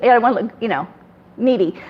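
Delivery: ordinary talk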